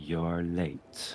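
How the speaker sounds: hushed, very quiet half-whisper close to the ear. Game master voices Corvus half-whispering into a player's ear, in Corvus's half-whisper. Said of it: "Corvus's voice whispers in your ear".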